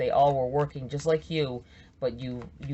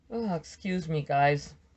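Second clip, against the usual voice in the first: slow speech said mid-yawn, yawning through the words; 3 semitones higher than usual. Addressing the group, the speaker excuses themself while yawning. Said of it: "Don't be offended because I'm yawning".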